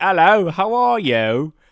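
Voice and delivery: bad, unconvincing put-on British accent, high and slow. Retelling a man on the phone who was told to talk British, bad British accent. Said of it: "it didn't sound British at all".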